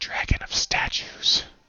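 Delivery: soft whisper under the breath, almost unheard. Retelling what a woman said under her breath, in a whispered tone. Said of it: "like just in this whispered tone".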